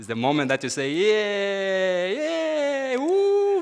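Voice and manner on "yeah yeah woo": put-on cheerful, swooping high voice. Speaker after a selfie, showing everyone how to pretend it was good: fake cheering. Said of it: "now you pretend it was good".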